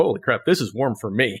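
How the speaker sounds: ordinary delivery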